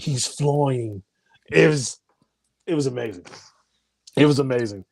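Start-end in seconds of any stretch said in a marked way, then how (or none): 0.0-1.0 mock seductive Irish accent. Retelling a movie's final scene: Kerry Condon's sexy Irish accent. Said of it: "in her sexy Irish accent say".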